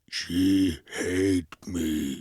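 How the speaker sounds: deep, monstrous creature voice. Urging a co-speaker to do the impression, then doing it as Frankenstein's monster. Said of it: "That's what he says. He says that in Bride of Frankenstein".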